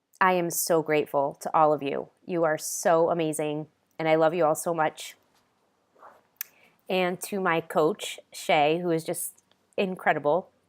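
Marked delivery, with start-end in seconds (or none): 0.2-5.2 choked up, a little teary. Thanking the Hoboken Mom Entrepreneurs Group, getting a little teary. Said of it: "I'm getting a little teary".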